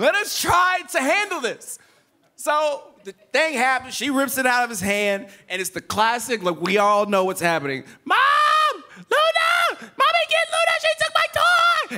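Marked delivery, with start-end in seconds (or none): 8.0-12.0 put-on very high-pitched, drawn-out small child's cry. Retelling a child calling for mom after a toy is snatched, imitating a high-pitched child's cry.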